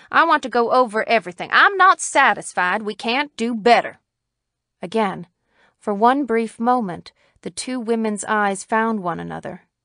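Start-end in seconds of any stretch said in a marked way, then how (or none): 0.1-3.9 cutting, pointed, incisive tone. Reading the county attorney speaking to the sheriff in a story: incisive. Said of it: "said the county attorney, / he asked absently. / said the county attorney, / said the county attorney incisively".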